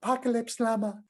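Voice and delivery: squeaky, silly little voice, very high. Showing how the phrase was said to make everybody laugh: funny little voice. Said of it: "in a funny little voice".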